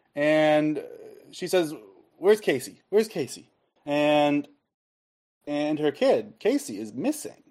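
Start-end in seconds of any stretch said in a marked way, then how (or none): 2.2-3.5 mock panicked voice, much higher pitch, faster. Retelling a forest tour where a mother lost her kid, imitating a panicking woman. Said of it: "a woman starts panicking".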